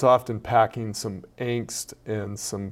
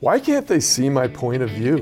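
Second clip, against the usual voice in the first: put-on frustrated, angsty teen voice with swooping pitch; 2 semitones higher, 4 dB louder than usual. Acting out a line as a teen would say it, imitating a frustrated teen. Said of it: "I was trying to talk like a teenager".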